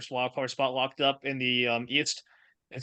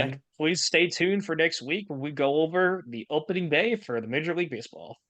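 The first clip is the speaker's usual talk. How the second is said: ordinary talk, nothing marked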